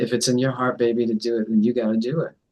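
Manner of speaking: plain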